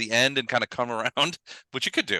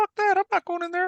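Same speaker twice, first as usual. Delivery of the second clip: squeaky, tiny spider voice, very high-pitched. After someone peers over an edge, a spider answers in a little spidery voice. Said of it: "you hear a little spidery voice go".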